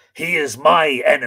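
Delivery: slow, loud, growled delivery. Narrator reads Fionn answering the frightened woman, growled. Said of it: "Fionn growled".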